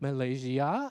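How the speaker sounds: "Malaysia" ending on a question-like upward lift. Showing how a word becomes a question, pitch rising on last syllable of Malaysia. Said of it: "他都是把最后一个音拉高，把它变成一个问句".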